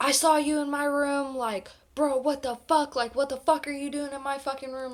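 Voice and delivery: mock enraged, loud, furious yelling and screaming. Retelling how a roommate barged in accusing Rob: imitating a roommate screaming. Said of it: "yelling, like, screaming at Rob".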